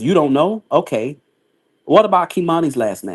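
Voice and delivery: ordinary talk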